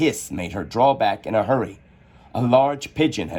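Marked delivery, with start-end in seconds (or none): none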